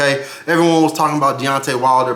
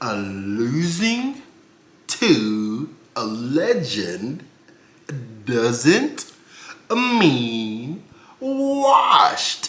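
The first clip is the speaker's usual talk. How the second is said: very slow, drawn-out delivery. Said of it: "Let me say it slowly".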